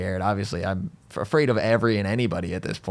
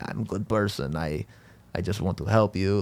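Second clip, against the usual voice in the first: put-on Russian accent. Retelling what a helpful stranger said: imitating Randall, accidental Russian accent. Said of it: "I don't know why he's Russian now".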